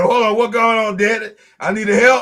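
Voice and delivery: the house cat's own voice. Imagining what the cat says after overhearing the speaker: voicing the cat. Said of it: "He like".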